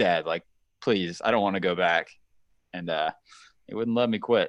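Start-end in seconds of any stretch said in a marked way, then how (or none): 0.0-2.1 put-on crying, tearful begging tone. Retelling a plea to dad in the car: imitating own crying plea. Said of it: "crying in the car".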